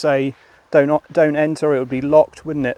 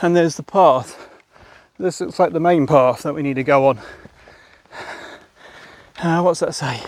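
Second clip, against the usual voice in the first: out of breath, winded. Walking a path and checking a sign, out of breath. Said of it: "Sorry about being out of breath".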